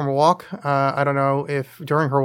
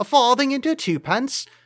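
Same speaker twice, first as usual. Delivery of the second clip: very high-pitched, fake, put-on English accent; 10 semitones higher than usual. Naming english coins in a coin trick: put-on english accent. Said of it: "that's my English accent".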